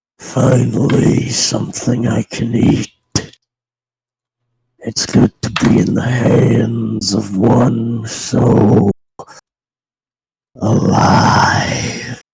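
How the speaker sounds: strange, otherworldly demon voice. At the end of a player's turn, a new voice speaks: very different voice. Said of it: "you hear what is a very different voice".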